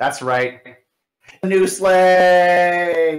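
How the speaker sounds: loud, high announcer voice, "sleigh" drawn out. Presenting a gift as Santa, in a Rod Roddy announcer impression. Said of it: "my best Rod Rod impression here".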